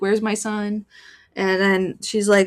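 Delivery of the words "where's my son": put-on panicked voice, much quieter. Summarizing a book's plot, imitating a panicked mother on a phone call. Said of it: "she's like panicked".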